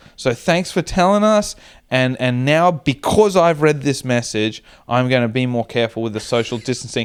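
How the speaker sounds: plain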